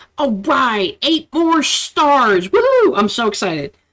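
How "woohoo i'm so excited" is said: mock cheer, plainly insincere, sarcastic fake excitement. Closing an episode of the Shadow Files, sarcastic excitement. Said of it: "That's sarcasm".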